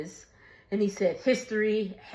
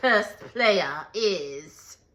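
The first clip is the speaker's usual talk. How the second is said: put-on Scottish accent. Speaker retells a man announcing something at a table, Scottish accent. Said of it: "But in his accent".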